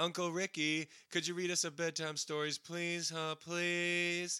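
high, put-on childlike kid voice. Acting out kids asking their uncle for a bedtime story, in a kid voice. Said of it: "him making like a kid voice".

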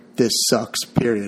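ordinary delivery

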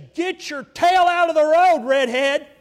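very loud, high-pitched, top-of-the-lungs shouting. Pastor acting out what some people would yell: imitating someone yelling. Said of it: "yell at the top of their voice".

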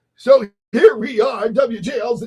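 put-on mock radio announcer voice. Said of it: "No, I'm kidding".

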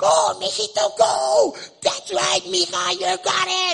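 very high, very loud cheering. Speaker describes a mother at her child's sports, imitating a mom cheering. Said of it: "you could hear your mama go".

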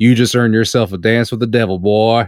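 cartoonish put-on cowboy drawl. Quoting a movie line, trying for The Rock but sounding like a cowboy: cowboy voice. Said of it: "I was a fucking cowboy".

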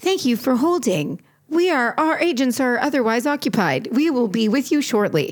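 mock automated phone hold recording voice. Retelling a customer service call: imitating a customer service hold recording. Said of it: "you'll hear the recording stop and it'll be like".

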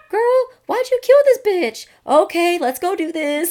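shrill, very high, very loud cheerleader voice. Imagining how someone would react to the plan: imitating Dawn. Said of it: "Why are we giving Dawn such a high voice?".

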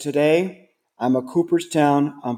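ordinary delivery

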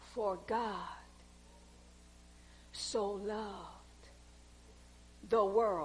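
halting, whispered, very slow word-by-word reading. Speaker reading a Bible verse aloud to the audience, reading slowly. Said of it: "I'm going to read it slow".

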